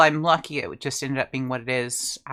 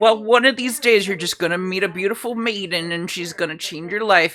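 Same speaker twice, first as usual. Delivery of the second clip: high, put-on old grandpa voice; 6 semitones higher, 4 dB louder than usual. Voicing a character as an old boomer giving life advice: old boomer voice. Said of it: "an old, uh, boomer".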